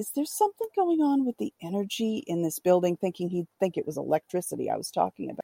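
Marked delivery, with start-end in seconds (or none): 0.0-3.0 very quiet, soft, hushed, under the breath. Retelling asking a man in his office a question, speaking very quietly. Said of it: "I said to him very quietly".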